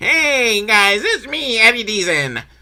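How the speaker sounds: high, slow nerdy voice, "hey" drawn out. Describing an eighties movie actor, the speaker does his nerdy Eddie Deezen voice. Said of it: "he's got like the really like nerdy voice".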